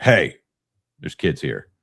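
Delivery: stern, booming, loud shout with swooping pitch. Retelling telling off swearing teenagers near kids, the speaker repeats a loud call-out. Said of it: "I did the loud".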